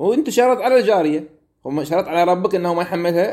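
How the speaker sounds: high-pitched, disbelieving, disapproving rebuking tone. Reading a text in the tone of disapproval: incredulous, disapproving question. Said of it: "أنا أقرأه على لهجة وأسلوب الاستنكار".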